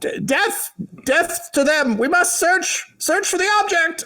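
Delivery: very high, frantic, panicked goblin yelling. A game master voices the lead goblin after a failed save: panicked goblin yell. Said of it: "the lead goblin who who threw his dagger yells".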